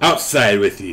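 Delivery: loud, irate, angry dwarf voice. Telling the group what they hear, then voicing it in an angry dwarf voice. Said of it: "you will hear a angry dwarf voice".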